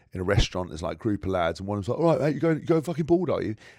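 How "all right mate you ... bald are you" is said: brash, cocky laddish jeer, pitched up. Retelling a lad in a restaurant, imitating a brash alpha lad. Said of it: "create this level of bravado in men".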